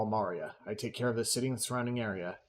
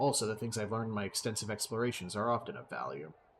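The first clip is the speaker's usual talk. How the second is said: ordinary delivery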